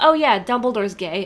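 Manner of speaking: ordinary talk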